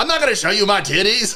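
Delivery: loud, high-pitched, blurted, acted-out delivery. Retelling a player's reply during a game: imitating someone saying it loudly.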